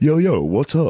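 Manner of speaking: high, corny dad voice trying street slang.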